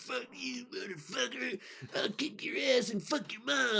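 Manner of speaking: put-on very high, furious, riled-up drunken yelling. Telling how a polite man threw out a drunk guy; mimicking a riled-up drunk guy. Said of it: "The guy'd be like".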